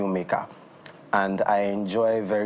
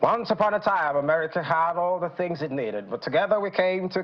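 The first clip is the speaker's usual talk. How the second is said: basic high-pitched American voiceover announcer read; 9 semitones higher than usual. Former voiceover artist showing what he can do: American announcer voice. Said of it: "I can do basic uh, American announcer voice".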